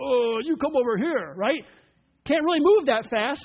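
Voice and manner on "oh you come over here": talking like a giant. Acting out Goliath calling David over: Goliath voice. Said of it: "and Goliath's like".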